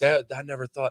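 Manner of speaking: ordinary talk, nothing marked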